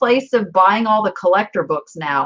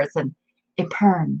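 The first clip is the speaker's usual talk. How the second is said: hushed, soft, close half-whisper; 5 semitones lower, 5 dB quieter than usual. Retelling how a woman at an antique mall corrected her: imitating someone half-whispering. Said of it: "she comes up to me and she whispers in my ear".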